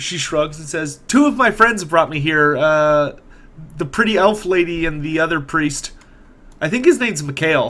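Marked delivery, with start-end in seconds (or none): none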